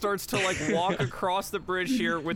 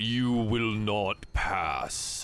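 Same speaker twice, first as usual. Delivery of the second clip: very hollow, empty voice, lower; 8 semitones lower than usual. Narrating a game, voicing a being that slams its sword into the bridge, very hollow voice. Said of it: "In a very hollow".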